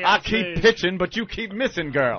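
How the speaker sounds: put-on rooster character voice. Joking after a bit, Foghorn Leghorn voice. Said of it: "excellent foghorn leghorn slave master".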